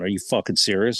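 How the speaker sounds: normal talking voice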